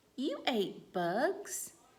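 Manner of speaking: rising question intonation on you ate bugs. Showing listeners how one sentence read differently becomes a question, rising question tone. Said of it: "That was a question".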